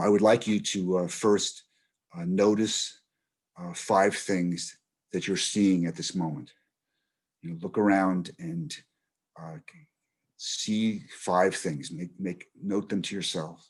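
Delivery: most soothing voice.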